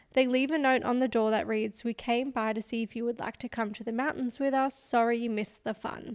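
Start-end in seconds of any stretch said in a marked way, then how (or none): none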